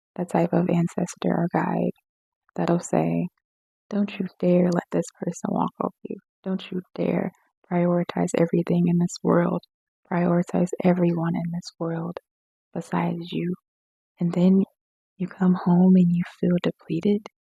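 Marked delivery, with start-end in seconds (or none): none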